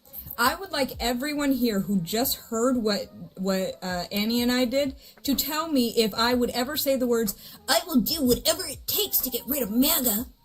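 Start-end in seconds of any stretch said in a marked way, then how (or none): 7.6-10.2 put-on cartoon boy hero voice. Quoting words the speaker says they would never say, Ash Ketchum voice. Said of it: "Why did you sound like Ash Ketchum".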